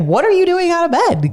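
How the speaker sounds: put-on angry scolding voice. Retelling scolding a child found out of bed: imitating own angry scolding. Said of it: "I don't know why I was mad".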